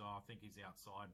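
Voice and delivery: ordinary talk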